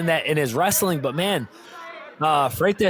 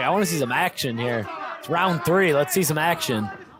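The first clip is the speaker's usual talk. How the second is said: ordinary talk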